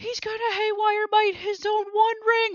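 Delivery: high, loud, excited yelling.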